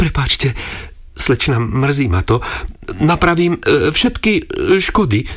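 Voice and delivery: flustered, stammering speech. Ervín apologizes to the young lady whose house he gnawed into; stammered, embarrassed apology. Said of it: "Koktal červený od hrč až po chvostík".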